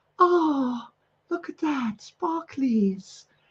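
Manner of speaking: put-on tiny, soft little-girl voice, slow and drawn out. Speaker retelling a video of a girl holding a sparkler, imitating a little girl. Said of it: "she's going".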